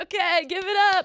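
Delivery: very high, drawn-out showman's hyping call. Retelling a performer on the train: imitating a subway train performer. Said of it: "He's like".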